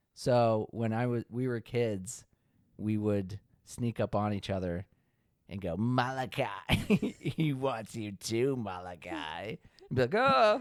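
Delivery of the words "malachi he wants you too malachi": sinister, creepy, demon-like calling voice. Recalling how as kids they'd sneak up on each other; demonic voice. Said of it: "he has the demonic voice".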